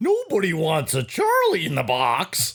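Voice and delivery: wobbling, warbly toy cartoon voice, swooping high up and down. Recalling the Misfit Toys scene, doing the toy's line in a warbly Charlie-in-the-Box voice. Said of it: "with the warbly voice thing".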